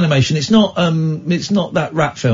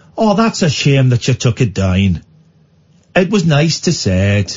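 put-on Irish accent. Doing an impression of the uncle for the other to guess: Eamon Holmes impression. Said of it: "The uncle".

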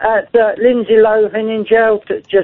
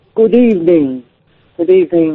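eerie, spooky horror-film vampire count voice; 5 semitones lower than usual. A caller greets the radio host in a put-on voice, Dracula voice. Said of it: "are you doing Alfred Hitchcock?".

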